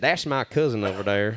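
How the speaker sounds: put-on South Georgia accent. Repeating what another speaker just said: imitating a south georgia accent. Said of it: "You said it different".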